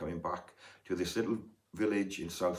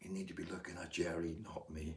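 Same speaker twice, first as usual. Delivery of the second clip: put-on whisper, quieter; 9 dB quieter than usual. Retelling what was said to a watching guitarist at a gig: retelling a whisper. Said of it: "I whispered to him".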